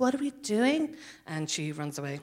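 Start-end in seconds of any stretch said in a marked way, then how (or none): 0.0-1.0 put-on earnest girl's voice. Recounting a scene where one of two earnest girls speaks, Aisling impression. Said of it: "That was my perfect impersonation of her".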